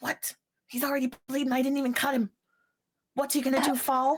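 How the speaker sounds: whispering angrily, furious and hushed. In a role-play scene, she whispers to another character: angry whisper. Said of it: "that like angry whisper, where she's like she would be yelling if she could".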